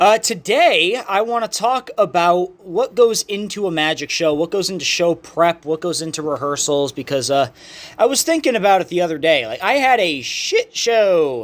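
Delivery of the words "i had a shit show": slow, very drawn out voice with cracking. Telling about a bad rehearsal: voice cracking. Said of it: "my voice cracked".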